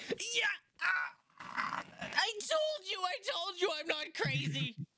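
elated, strained, high-pitched swooping cry through pain. Voicing a character who jumps up and strains himself: excited yell through pain. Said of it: "he strains himself 'cause he's in pain".

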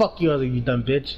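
acted angry, mad voice. The speaker retells what was said to another player, retelling own mad insults. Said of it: "I was all mad".

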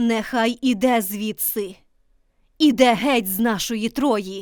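commanding. Cassandra, pointing at Paris, speaks commandingly. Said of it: "владно сказала".

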